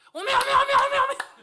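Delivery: speaking in Jeolla dialect. Imitating someone's reaction behind a door, imitating excited Jeolla speaker. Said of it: "내가 흉내 한번 내볼게요".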